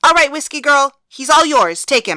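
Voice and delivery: very loud, high yell. After announcing the winner, she turns to the ring and calls out, yelling out. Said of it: "Then she turned up to the ring and yelled out".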